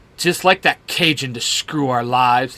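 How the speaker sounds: usual speaking voice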